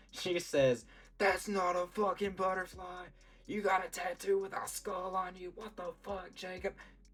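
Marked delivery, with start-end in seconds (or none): 1.2-6.7 play-acted very high, shrill, enraged, furious yelling. Retelling how mom reacted on seeing the tattoo: imitating someone yelling angrily. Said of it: "yelling at me".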